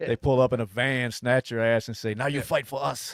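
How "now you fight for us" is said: terrible put-on Ukrainian accent, higher pitched. Acting out the recruiters grabbing someone off the street: terrible Ukrainian accent. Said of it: "That was a terrible Ukraine accent".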